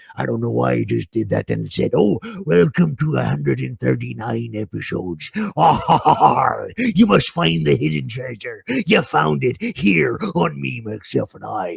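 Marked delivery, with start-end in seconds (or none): 2.0-11.8 rough, creaky put-on pirate voice. A host welcoming everybody to episode 139, in a pirate voice. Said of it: "like I was a pirate".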